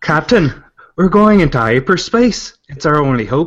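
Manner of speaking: attempted Irish accent. Saying a given sentence when asked to, in an Irish accent. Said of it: "With an Irish accent".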